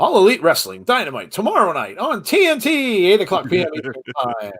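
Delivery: put-on swooping old-time broadcast announcer voice. Reading a wrestling show promo aloud: old-style announcer voice. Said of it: "Gotta read it like the old style announcers".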